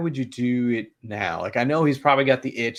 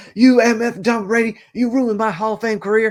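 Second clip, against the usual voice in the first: very high, very loud, shrill, booming yell; 11 semitones higher, 8 dB louder than usual. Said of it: "Phillip Rivers is the one doing something stupid".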